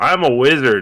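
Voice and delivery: very loud, high-pitched shouted yell. Explaining what their character did in the game, retelling a yell. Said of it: "I just I yelled out".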